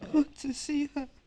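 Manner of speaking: very high, sobbing through tears. Someone being told to stop crying answers: crying. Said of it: "stop crying".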